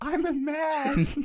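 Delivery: put-on very high, loud girlish yell. Retelling how the whole class laughed: imitating own yell in a girl's voice. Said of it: "yelling out loud in a girl's voice".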